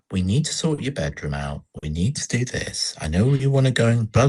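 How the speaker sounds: put-on soft, gentle speech. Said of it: "she just says it very gently".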